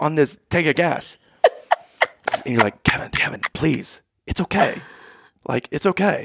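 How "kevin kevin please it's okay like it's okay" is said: hushed, soft whisper. Retelling a hushed exchange in a van, imitating a whisper. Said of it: "whispering this back and forth".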